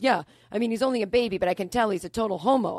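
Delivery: put-on Jersey tough-guy voice. Retelling what a tough jersey guy said at the door: imitating a tough jersey guy. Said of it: "this tough kinda, like, Jersey guy".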